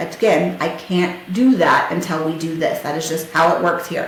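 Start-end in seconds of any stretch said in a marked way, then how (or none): none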